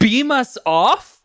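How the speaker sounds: acted scornful, put-out, dismissive tone, high and upset. Retelling a film scene's reply to a question: imitating a dismissive, upset reply. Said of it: "so dismissively and upset".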